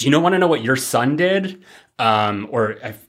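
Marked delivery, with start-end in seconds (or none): 0.0-1.6 higher, scolding, reproachful tone. Recounting a show scene where a woman scolds a man about his son: mock-reprimanding tone. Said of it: "in a very like reprimanding way".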